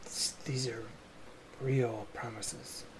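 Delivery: very quiet whisper, barely audible. Answering thanks for keeping a pinky promise: whispering. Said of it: "You're whispering".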